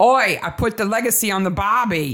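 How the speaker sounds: clumsy, bad fake Australian accent. Quoting a man from the story she is recapping, in a bad australian accent. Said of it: "it's a really bad Australian accent".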